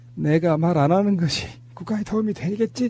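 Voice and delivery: put-on voice of an older politician. Act out the reply to reporters asking about the UAE envoy, as a Lee Myung-bak impression. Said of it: "이명박 성대모사 가능하신 분".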